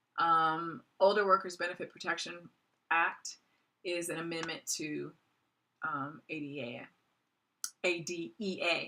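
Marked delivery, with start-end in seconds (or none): 1.0-2.4 rushed, fast run-through. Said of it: "I'm just speaking too fast".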